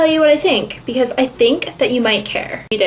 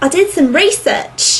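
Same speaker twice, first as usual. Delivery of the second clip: put-on Australian accent, pitch rising a bit; 5 semitones higher than usual. Retelling the video Tony made in reply, imitating Tony's Australian accent. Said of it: "is that an Australian accent?".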